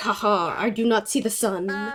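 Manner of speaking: funny, mocking put-on count voice. Wearing a cloak and imitating Jack to Coco for laughs: funny Count Jackula impression. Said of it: "and imitate Jack?".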